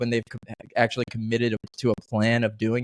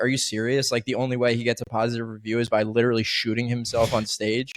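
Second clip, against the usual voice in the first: ordinary delivery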